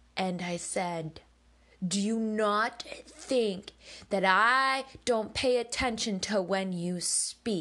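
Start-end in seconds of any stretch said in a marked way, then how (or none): 1.8-7.6 put-on furious outburst, higher pitch. Retelling an outburst at mother in the kitchen: retelling her own furious outburst. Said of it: "Incredible Hulk of fucking anger".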